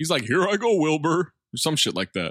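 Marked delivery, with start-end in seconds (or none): 0.2-1.3 slightly higher-pitched TV talking-horse voice. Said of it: "He's doing a Mister Ed impression".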